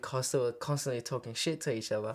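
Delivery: ordinary delivery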